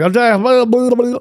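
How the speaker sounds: put-on Southern accent.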